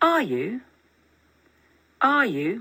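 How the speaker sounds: are you with pitch lifting at the end. Explaining a short reply question, the speaker repeats it with rising question intonation. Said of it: "the voice naturally rises at the end".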